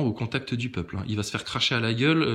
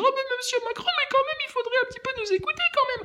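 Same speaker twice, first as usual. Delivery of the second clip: mocking, put-on small meek timid voice, higher. Mocking a meek journalist addressing the president: mocking small timid voice. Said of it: "qui vient avec sa petite voix te dire".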